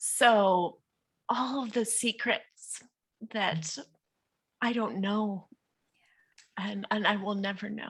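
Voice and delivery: tearful, halting, choked-up voice breaking. Speaker talking about their mother no longer recognizing them, about to cry. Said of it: "Sorry, I'm gonna cry".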